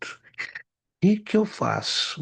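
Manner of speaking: put-on tearful, high, very slow, drawn-out crying.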